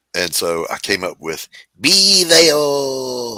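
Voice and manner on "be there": bad, high cartoon crab voice, "there" drawn out. Retelling voicing a crab mascot for a radio ad: horrible crab mascot voice. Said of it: "this horrible voice".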